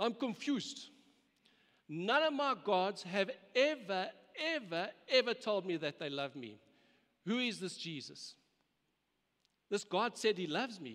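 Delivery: put-on Indian English accent throughout. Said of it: "he said in his Indian accent".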